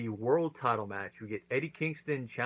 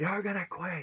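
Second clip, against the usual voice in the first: high, yelled, demanding delivery. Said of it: "he's yelling at him".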